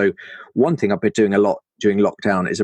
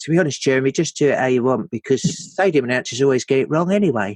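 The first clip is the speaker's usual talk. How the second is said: English footballer speaking voice; 4 semitones higher than usual. Retelling a producer's advice about pronouncing names, in a David Beckham voice. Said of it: "I did a David Beckham voice for the producer".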